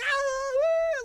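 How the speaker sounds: play-acted loud, very high, drawn-out wild shriek. Retelling how a drunk concert-goer yelled during the band: imitating a woman screaming. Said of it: "she's just screaming".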